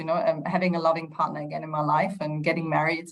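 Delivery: normal talking voice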